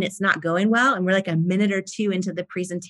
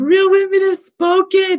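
mock blubbering, very high and very loud; 12 semitones higher, 9 dB louder than usual. Recounting her words at the QVC studios as her husband ran in, retelling her own sobbing. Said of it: "and I'm like sobbing".

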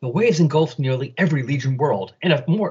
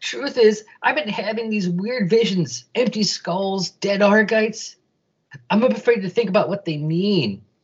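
whiny, high-pitched character voice; 6 semitones higher than usual. Reading a story aloud, the narrator voices Garen: whiny Garen voice. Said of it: "we've done the whiny Garen voice".

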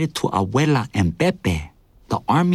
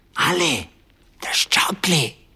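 loud, carrying stage whisper; 4 semitones higher than usual. Returning through an open door carrying two mugs, he calls to a companion: loud whisper. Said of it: "he said in a loud whisper".

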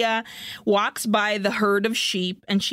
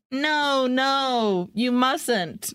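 put-on weak, feeble voice, higher; 3 semitones higher than usual. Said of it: "but she's like".

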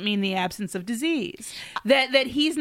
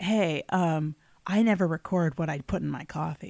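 put-on giddy, sneaky tone, lower pitch; 7 semitones lower than usual. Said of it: "he was like".

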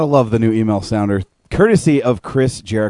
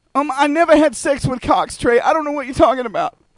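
very high-pitched character voice. Answering a question asked of Bobcat, in a Bobcat impression. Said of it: "Hey, Bobcat, I got a question for you".

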